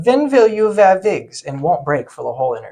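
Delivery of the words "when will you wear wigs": put-on weird, very loud, high Eastern European accent. Retelling a buddy's interview bit, speaker quotes his question: weird little eastern european voice. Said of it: "does this weird little Eastern European voice".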